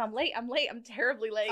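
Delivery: ordinary delivery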